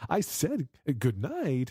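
mock, very slow, high, affronted, drawn-out sing-song. Retelling a voice assistant's reply to a wrong greeting: imitating indignant Siri. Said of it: "Did you hear the indignation in Siri's voice?".

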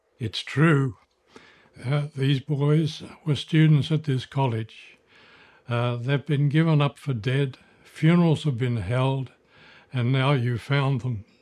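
plain

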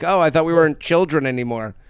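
ordinary delivery

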